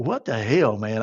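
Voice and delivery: put-on fed-up, at-the-limit, exasperated outburst. Retelling a supervisor taking the luggage: retelling own exasperated outburst. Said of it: "I was at my fucking limit".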